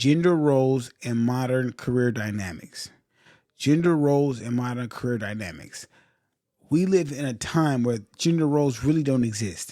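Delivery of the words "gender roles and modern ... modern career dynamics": very slow, deliberate enunciation, each word laid out clearly. Speaker announcing the topic he does not want to rush, very slow. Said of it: "I'm gonna say this very slow".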